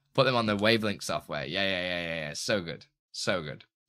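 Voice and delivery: normal talking voice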